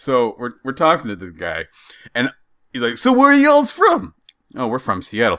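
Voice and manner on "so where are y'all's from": put-on New Jersey accent, pitched very high. Retelling a conversation with a guy they met, in a put-on Jersey accent. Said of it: "The voice you're doing".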